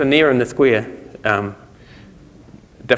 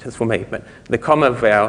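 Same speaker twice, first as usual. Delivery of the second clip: plain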